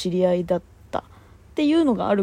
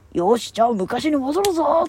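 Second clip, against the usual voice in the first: high put-on anime sidekick cartoon voice; 6 semitones higher than usual. Retelling a cartoon scene and voicing one of its characters: cartoon character voice impression. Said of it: "声真似する必要あったっていうね".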